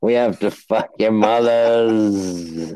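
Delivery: put-on British statesman voice. Showing another speaker a drunk-party impression: Winston Churchill impression. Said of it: "which is just Winston Churchill".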